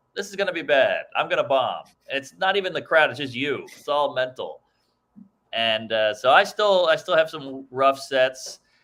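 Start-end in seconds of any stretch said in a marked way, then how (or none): none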